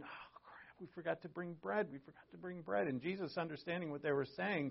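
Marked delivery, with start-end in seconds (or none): 0.0-2.9 soft half-whisper under the breath. Retelling disciples in a boat who forgot bread: imitating someone half-whispering. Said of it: "they're kind of whispering to each other".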